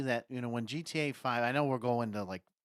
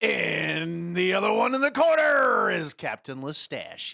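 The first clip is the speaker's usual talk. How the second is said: very loud, very slow, booming ring announcer voice; 6 semitones higher, 9 dB louder than usual. Show host introducing the other host in a ring announcer voice. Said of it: "why the hell did you sound like a ring announcer?".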